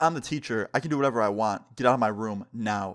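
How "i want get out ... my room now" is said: ordinary talk, nothing marked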